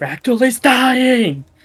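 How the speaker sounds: shrill, high-pitched scream. A player voices a character during a tabletop game battle: Bellum screaming. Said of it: "Bellum is screaming".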